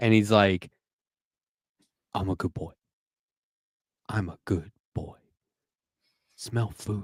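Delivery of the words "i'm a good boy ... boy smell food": soft, narrated audiobook-style dog character voice. Recalling an audiobook narrator voicing a dog's thoughts, in a dog voice. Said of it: "does dog voice for this dialogue".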